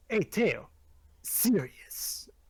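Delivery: put-on cartoon hedgehog hero voice. Trying to emulate the experience for the others, in a Sonic the Hedgehog impression. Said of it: "You don't sound enough like Sonic here".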